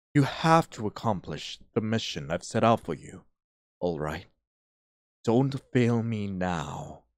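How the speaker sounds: soothing, mysterious voice. Game narrator voicing an unseen figure assigning the player a mission, in a strangely comforting voice. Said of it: "You hear a voice, a strangely comforting voice".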